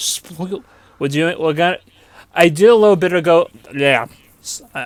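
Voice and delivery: stuttering, stumbling over words. Starting to explain something done a little bit ago, stuttering. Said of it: "I am stuttering once more".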